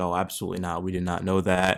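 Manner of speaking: ordinary talk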